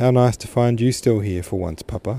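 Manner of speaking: ordinary delivery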